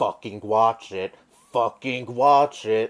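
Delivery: menacing, threatening tone. Quote a husband's response to his distraught wife in a leaked video, imitating a threatening tone. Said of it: "in a threatening tone".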